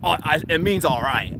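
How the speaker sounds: curt, cold, short delivery with some attitude. Retelling what a police officer said: imitating a curt reply with some tone. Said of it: "Like that, with, like, some tone".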